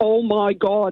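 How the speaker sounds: put-on Northern Irish Derry accent. Retelling a cousin's surprised greeting in a bathroom: imitating a thick Derry accent. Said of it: "in a really thick Derry accent".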